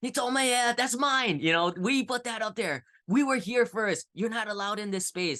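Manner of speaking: very high, shrill, agitated, upset screaming. Retelling how the neighbor slammed her door open: imitating a neighbor screaming. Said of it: "screaming in Cantonese".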